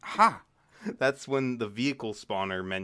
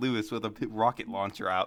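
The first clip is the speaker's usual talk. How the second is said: ordinary delivery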